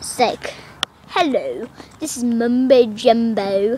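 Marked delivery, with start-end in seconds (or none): 1.1-3.8 put-on British English accent. Describing a YouTuber who speaks British, the speaker does a Mumbo Jumbo English accent. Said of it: "It's an English accent".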